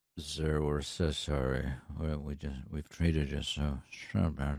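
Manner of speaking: low energy, deflated voice.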